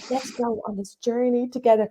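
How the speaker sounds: mock dead-serious, earnest delivery, closely imitated. Retelling how family mimicked her on videos: imitating family's impression of her. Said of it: "my family decided to do impressions of me".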